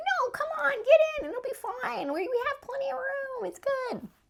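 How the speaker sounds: squeaked out at a very high pitch. Retelling what the elevator guy told the people waiting, in a Mickey Mouse voice. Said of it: "he sounds like Mickey Mouse a little bit".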